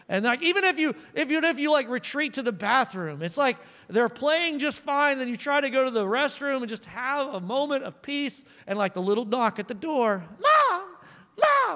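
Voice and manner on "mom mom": put-on very high, screechy pterodactyl kid voice. A mother imitates a child knocking at the bathroom door, pterodactyl child voice. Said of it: "that pterodactyl voice is what I do for all children".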